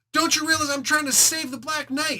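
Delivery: put-on, very high-pitched furious scolding yell. Speaker recounts a fight scene, imitating Namor yelling at the other fighter. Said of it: "he starts yelling at him".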